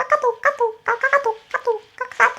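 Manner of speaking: very high, soft, back-to-back katok tones. Speaker shows a levelled-up party trick of alerts arriving in a row: KakaoTalk notification impression. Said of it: "카톡이 연속으로 오는 상황으로 제가 개인기를 레벨업".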